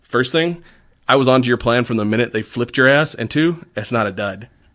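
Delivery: ordinary delivery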